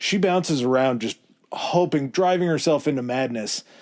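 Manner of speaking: normal talking voice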